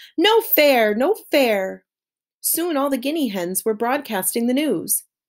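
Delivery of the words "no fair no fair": indignant, high, loud cry dragged out very slowly. Narrating a story, she cries out for all the animals to hear, crying out loudly. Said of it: "she cried out for all the animals to hear".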